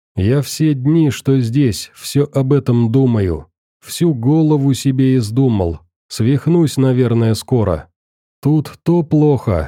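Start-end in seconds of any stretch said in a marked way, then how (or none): none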